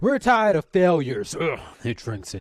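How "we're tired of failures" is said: put-on very loud, very high, shrill drunken holler. Voicing a drunk character yelling at the group: drunk man yelling. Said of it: "The drunk yells out".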